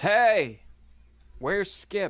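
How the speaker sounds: loud, high calling voice. Ezra casts prestidigitation to raise his voice and calls out: magically raised voice. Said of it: "casts prestidigitation to raise his voice and says".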